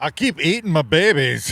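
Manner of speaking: fat-man comedy voice. Showing off an impression he used to do: Fat Bastard impression. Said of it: "I used to do a uh, fat bastard".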